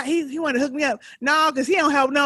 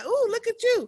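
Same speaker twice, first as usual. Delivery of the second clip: delighted, high, excited cheering tone; 8 semitones higher than usual. Retelling a show scene where one character greets Uncle Frank: imitating an excited hype greeting. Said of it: "he was hyping him up".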